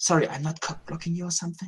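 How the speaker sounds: whispering. Acting out a planned aside to someone nearby; whispering. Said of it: "that I can whisper to Trevor".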